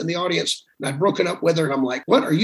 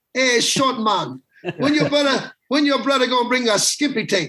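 put-on voice, much higher pitch; 7 semitones higher than usual. Retelling how Bahamian men kept pestering the speaker's brother for tapes; imitating Bahamian men. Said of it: "they would come up to him after every few weeks and go".

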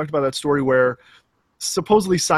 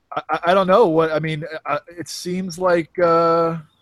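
normal talking voice

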